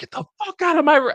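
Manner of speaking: mock-furious shout. Recounting being woken up and acting out their past self: retelling an angry yell. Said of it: "I was pretty fucking pissed".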